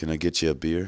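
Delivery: play-acted sleazy, loaded, creepy, suggestive voice. Retelling a stranger at a party offering a beer: imitating a creepy come-on. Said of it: "in the most creepy way possible".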